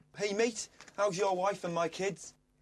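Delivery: put-on Scouse accent. Sharing a rejected line with the group, performing it in a Scouse accent. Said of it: "I've got one of the Scouse ones".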